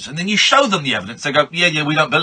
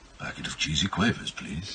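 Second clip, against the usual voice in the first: put-on stoned suave spy voice, lower and quieter; 14 semitones lower, 13 dB quieter than usual. Imagining a stoned character with the munchies ordering snacks: James Bond voice with munchies. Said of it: "what James Bond would sound like if he was".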